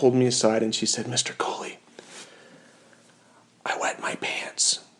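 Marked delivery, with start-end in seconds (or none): 1.1-4.8 very quiet, hushed, soft whisper. Retelling a student pulling the teacher aside: imitating a student whispering. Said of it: "she kind of whispered".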